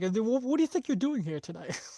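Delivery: demanding, rising pitch. Retelling a character's line as a Chris Hansen impression. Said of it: "he pulls the Chris Hansen".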